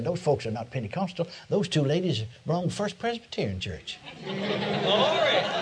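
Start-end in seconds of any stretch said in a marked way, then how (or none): 0.0-4.0 quieter put-on whisper. Retelling what the pastor whispered mid-sermon: imitating a whisper. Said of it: "he whispered and said".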